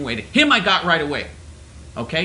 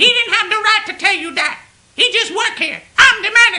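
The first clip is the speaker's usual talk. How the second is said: high, loud, dictatorial put-on female voice. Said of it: "the female Idi Amin routine".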